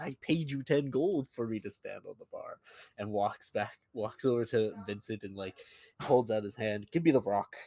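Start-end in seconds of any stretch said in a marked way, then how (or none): 0.0-2.6 annoyed, irritated voice, pitched up. Voicing a character who turns to the bartender, annoyed. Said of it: "an annoyed look and said".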